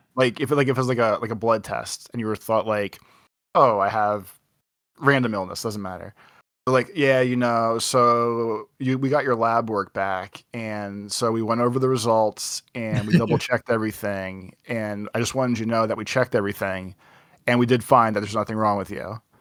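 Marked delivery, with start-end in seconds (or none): none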